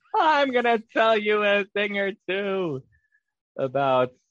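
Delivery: high-pitched, slow, stretched-out sitcom comic voice. Doing a voice that the other speaker calls a Jerry Seinfeld voice. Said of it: "that was a great Jerry Seinfeld voice".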